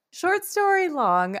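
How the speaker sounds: "story" stressed, high pitch, slightly slow. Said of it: "I guess it's short story long".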